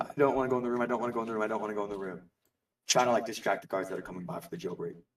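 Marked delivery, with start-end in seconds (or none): 0.0-2.2 put-on sobbing and crying, repeated. Player character crying on the ground to distract guards, acted crying. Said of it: "I start like crying on the ground".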